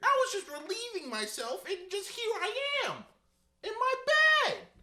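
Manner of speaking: put-on very high, loud, sing-song three-year-old voice. Retelling how 3-year-old Reese talked after waking in bed: imitating 3-year-old Reese. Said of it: "That's what 3-year-old Reese sounded like".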